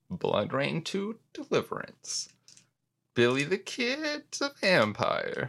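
cracking voice. Pitching a movie tagline to the others: voice cracking. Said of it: "The voice crack and everything".

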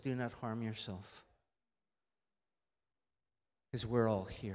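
deep, low, hushed, calling voice. Speaker quoting what Paul says to the jailer, deep voice. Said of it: "it goes deep tonight".

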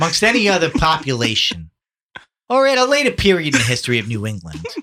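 deliberately put-on Boston accent with swooping pitch. After another speaker says he'll try, the speaker delivers lines in a Boston accent. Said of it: "you haven't been doing a Boston accent this whole time?".

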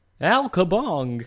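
high, slow cartoon war cry. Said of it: "go from the Brain to, like, Al Kabong".

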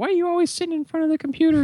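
very high-pitched female voice. Retelling what mom says on walking in: imitating mom's voice. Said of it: "she's like".

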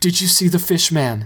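pressing, insistent tone. A man being cut free of his bonds by a woman, insistent. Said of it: "he insisted".

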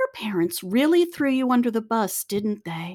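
grandmotherly sweetness, calm and easy. Retelling what a therapist said during a session: imitating someone saying it sweetly. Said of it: "very sweetly said".

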